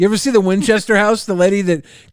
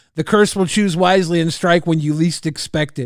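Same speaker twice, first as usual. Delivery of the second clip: normal talking voice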